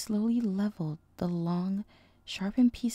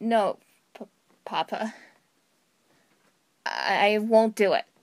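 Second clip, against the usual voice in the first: nervous, anxious tone, louder; 6 dB louder than usual. The colt answers his glaring father: nervous answer. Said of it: "The colt answered nervously".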